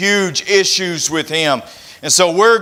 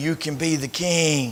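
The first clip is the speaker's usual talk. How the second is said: soft, hushed half-whisper under the breath; 3 semitones lower, 8 dB quieter than usual. Acting out Satan half-whispering when he feeds five thousand, imitating a half-whisper. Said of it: "and he's whispering".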